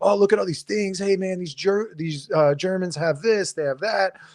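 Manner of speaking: all worked-up, excited, high-pitched enthusiasm. Retelling what a buddy said in Germany: imitating a friend being excited. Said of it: "he's all excited".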